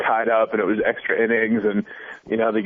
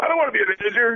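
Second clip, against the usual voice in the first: mock, very high, touchy defensive protest; 12 semitones higher than usual. Retelling a man's reply to a throwaway line about being a manager, imitating someone really defensive. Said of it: "He said it really defensively".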